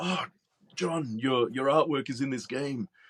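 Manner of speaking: mock eager, thrilled, very excited delivery. Retelling what a friend told him on the street: imitating Camillo speaking very excitedly. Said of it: "Camillo very excitedly told me".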